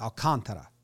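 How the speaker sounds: 'can' in alcantara stressed, second syllable. Explaining where they put the emphasis in Alcantara, stress on second syllable 'can'. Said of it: "And the con is where they do the emphasis".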